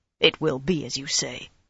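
plain reading voice

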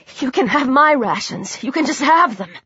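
plain

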